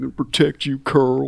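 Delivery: terrible put-on Southern accent. Imitating an actor's southern accent in his zombie show role: Andrew Lincoln's terrible southern accent. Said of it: "his terrible southern accent".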